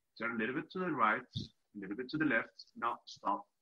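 very calm, steady voice. Retelling how the listener guided the quad beside the dogs, imitating a very calm voice. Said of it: "talking in this very calm voice".

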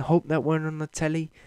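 put-on Liverpool Scouse accent. Retelling what a man said after slipping during an interview, imitating a scouse accent. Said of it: "with a Scouse accent like he's got".

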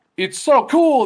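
put-on scream. Retelling how the game character says a line: imitating a scream. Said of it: "he screams like".

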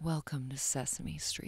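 slightly seductive, a little sultry tone. Asked by another speaker to say a line aloud, a little sultry. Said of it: "That was a little sultry".

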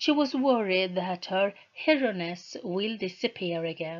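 plain reading voice

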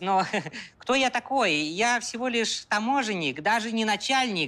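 put-on Georgian accent.

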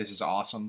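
ordinary talk, nothing marked

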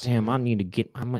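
put-on laid-back, low, relaxed voice. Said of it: "That's my [name] impression".

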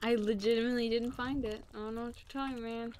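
unconvincing, feigned innocent tone. Accused of cheating, denying having found it, feigned innocence. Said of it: "You sound so fake right now".

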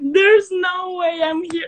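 overwhelmed, teary, tearful disbelief.

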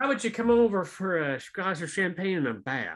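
laid-on Southern US accent. Playing a rich person inviting someone over: Southern accent. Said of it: "that was the Southern accent".

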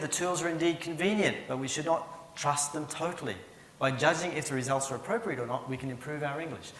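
ordinary talk

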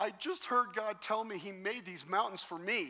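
crying through every word, high and sobbing. Recounting a woman breaking into tears in a parking lot, imitating someone sobbing. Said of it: "And she's sobbing".

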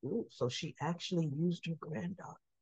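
put-on mutter under breath. Recounting a scene, quoting what a man said under his breath: retelling a mutter. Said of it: "under his breath".

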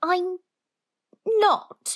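shrill, very high-pitched cry. Answering what someone has just said about him, crying out. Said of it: "he cried".

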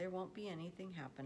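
plain

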